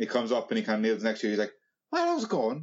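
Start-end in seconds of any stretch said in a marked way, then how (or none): 1.9-2.6 put-on Irish accent, higher. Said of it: "You're Irish as well now, Michael Jordan".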